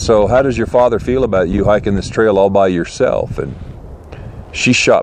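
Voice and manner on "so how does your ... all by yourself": fatherly, slightly condescending tone, faster. Speaker retells what he asked a woman hiking the trail by herself: retelling paternal, slightly condescending tone. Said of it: "in my paternal voice, and probably a little bit condescending".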